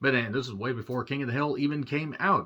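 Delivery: ordinary talk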